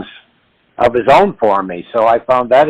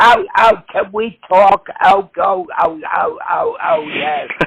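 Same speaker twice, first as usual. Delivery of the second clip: royal-sounding voice, pitched higher; 11 semitones higher than usual. Imagining the Queen doing a Joan Rivers impression: the Queen doing Joan Rivers. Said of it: "the Queen do, um, Joan Rivers".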